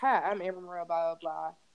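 proper, polished, put-together voice. Retelling her first public speaking class introduction: imitating her polished good voice. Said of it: "turn on my good voice and just actually be like".

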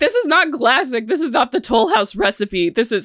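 worked-up, upset yelling. Retelling getting upset when a cookie is called classic, imitating own yelling. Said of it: "and then I start yelling at him".

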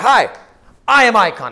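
very loud, very slow, drawn-out, eager, enthusiastic. Retelling introducing oneself to the first person met: retelling own enthusiastic greeting. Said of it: "I said it with the most enthusiasm ever".

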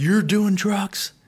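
mock very high-pitched shrieking yell. Speaker recounts his dad chasing him into the driveway, imitating a screaming dad. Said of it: "just screaming at me".

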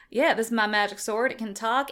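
ordinary talk

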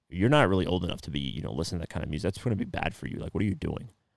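weird, slick, disrespectful tone. Retelling a stranger's comment about the album: imitating a weird disrespectful tone. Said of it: "in a weird, disrespectful way".

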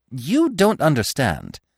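sharp, reproachful, running scolding tone. The squirrel goes on at the woodpecker, who is eating bugs, scolding. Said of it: "the squirrel went on scolding".

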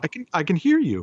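very high, tearful, on the verge of tears, disbelieving. Retelling a friend's first time hearing clearly: imitating someone tearful. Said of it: "she actually started to cry a little bit".

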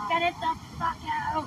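scream, stretched out and pitched high. Recounting what she screamed during childbirth, retelling a scream.

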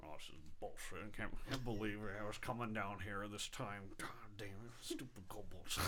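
gruffer half-orc voice.

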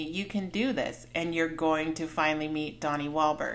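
ordinary delivery

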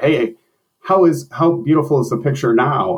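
loud high yelling. Retelling calling out to her from across the office: retelling a yell. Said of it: "And I yelled to her".

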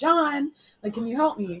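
ordinary talk, nothing marked

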